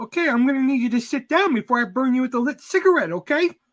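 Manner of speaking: sugary put-on nice voice. A speaker shows what to say to screaming kids, in a nice little voice. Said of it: "you just say real in your nice little voice".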